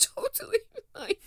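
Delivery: mock very high voice on the verge of tears. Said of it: "Bursting into tears".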